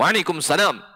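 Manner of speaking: curt, clear, firm and plain. Demonstrating how to answer a greeting from another woman's husband, firm and plain. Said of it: "Nah gitu bu. Jadi jelas. Jangan dilemah lembutin".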